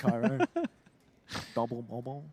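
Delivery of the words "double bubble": put-on spoken with a Scottish accent. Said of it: "said in a Scottish accent".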